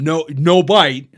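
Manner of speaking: firm commanding voice. Retelling telling a child not to bite: imitating own commander's voice. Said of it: "in my commander's voice".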